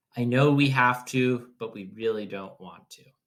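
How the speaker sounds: plain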